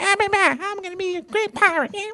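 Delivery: very high-pitched cartoon-style voice. Imitating a kid who wants to be a great pirate: Scrappy Doo voice. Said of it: "gonna be all Scrappy Doo".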